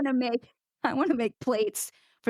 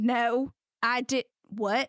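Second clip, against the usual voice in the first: put-on, very slow, drawn-out, really mad outburst. Retelling how they sound when getting real mad: imitating own mad outburst. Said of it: "sometimes I get real mad".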